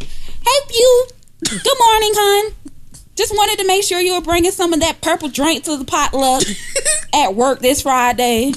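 put-on woman's voice.

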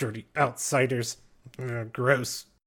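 goblin voice, muffled. A goblin with webbing over his mouth speaks up to the players, in a muffled goblin voice. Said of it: "so it kind of comes out sounding muffled".

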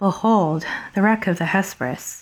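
downhearted, dejected, low-spirited delivery. Actor trying the character's line the way he reads her, feeling low. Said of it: "And I say she's feeling low".

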